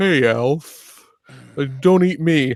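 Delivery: slowly drawn cartoon cat voice. Acting out a scene where Garfield meets Alf: Garfield voice. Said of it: "Garfield shows up".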